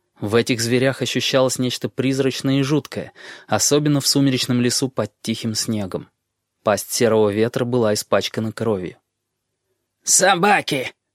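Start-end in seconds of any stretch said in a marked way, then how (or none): 10.0-10.9 disdainful, contemptuous, pitched-up outburst. A bald man dismisses the wolves as dogs, contemptuous. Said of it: "презрительно бросил лысый".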